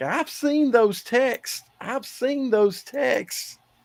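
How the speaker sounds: put-on, very high calling yell. Retelling what a man kept yelling on the sidelines every play, retelling a yell. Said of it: "he's yelling things like".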